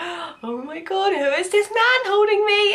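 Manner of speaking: swooning, awestruck tone.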